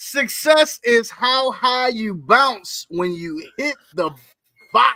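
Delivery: slow, weighty reading.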